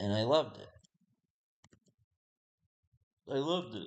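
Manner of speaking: sounding near tears, about to cry. Recalling family giving her pony gifts as a child, sounding about to cry. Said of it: "sounds like I'm about to start crying".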